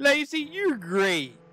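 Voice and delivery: very high-pitched, mocking, sarcastic voice. Urged to start being nice to Lacie, addressing her: sarcastic. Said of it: "Stop all that sarcasm in your voice".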